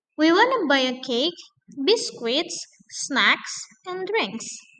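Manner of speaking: pitch rises on each item, falls on drinks. English list intonation lesson, rise on items, fall on drinks. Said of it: "at the last list itu harus falling".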